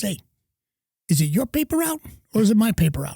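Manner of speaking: put-on big, heavy, thick, swooping New York accent. Retelling his dad's reply when asked for a ride: thick new york accent. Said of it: "my dad always had the big New York accent".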